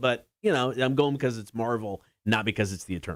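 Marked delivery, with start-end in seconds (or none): none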